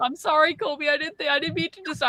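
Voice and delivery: high, fully apologetic voice. Retelling apologizing to the dog Kobe for disturbing him, retelling an apology. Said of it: "I had to go into a whole apology".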